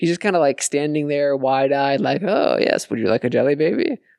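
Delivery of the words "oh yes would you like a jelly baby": put-on voice, composed with a manic edge. Imitating Tom Baker standing wide-eyed with a grin. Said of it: "My brilliant Tom Baker impression".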